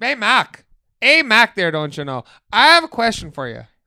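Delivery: fake Minnesota accent, sounding Canadian. Trying out a voice for a bit, greet someone in a put-on Minnesotan accent. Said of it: "Are you Canadian?".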